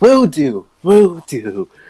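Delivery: very slow, heartfelt delivery with chuckling through it. Narrator voices a woman's short reply with a heartfelt chuckle. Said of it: "she gives a heartfelt chuckle and says".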